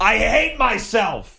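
sudden, very high-pitched yelled outburst. Speaker acts out someone on video who flubbed a script, retelling a yell. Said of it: "and yells".

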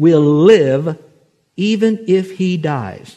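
slow, loud, stretched speech.

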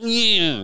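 high, pained, cat-like yelp on "yeah". Imitating the other speaker's answer, like a cat whose tail got hit. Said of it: "Like a cat that just someone on a, with a rocking chair hit its tail".

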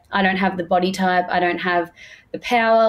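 usual speaking voice

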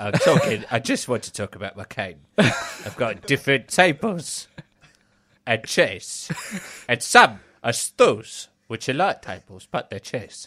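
put-on London accent like a classic film star. On a podcast, a co-host drops into a Michael Caine impression. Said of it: "Michael Caine showing up anyway".

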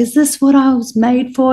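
acted, desperate, high-pitched scream with full lungs. Retelling crying out alone in the park at night: retelling own desperate scream. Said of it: "I was screaming at the top of my lungs".

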